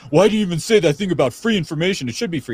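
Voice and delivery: worked-up, irritated, indignant, angry voice. Speaker retells how a man got mad at him: mock-angry. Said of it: "he gets all mad and he's like".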